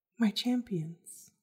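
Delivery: gentle voice. A narrator voices someone calling out as the party packs up camp, soft voice. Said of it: "you hear a soft voice".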